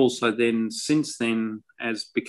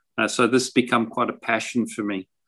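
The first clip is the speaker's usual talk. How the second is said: plain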